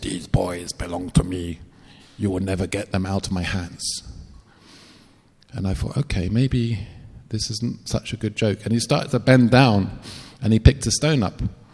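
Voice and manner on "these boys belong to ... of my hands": odd, unnatural put-on voice, low and hushed. Speaker retells what Francisco said to them, in Francisco's strange voice. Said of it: "in this strange voice".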